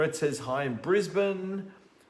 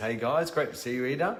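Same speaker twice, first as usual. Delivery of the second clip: usual speaking voice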